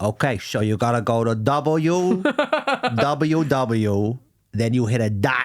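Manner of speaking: tough mobster voice, like a mob boss. Speaker riffing on how Tony Soprano gives a web address: Tony Soprano impression. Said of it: "every time Tony Soprano gives you a web address".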